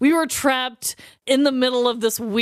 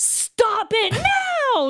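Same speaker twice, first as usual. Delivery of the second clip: very high, shrill scolding yell, drawn-out; 11 semitones higher than usual. Retelling scolding two fighting teens: imitating own yell. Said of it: "And I'm yelling at him".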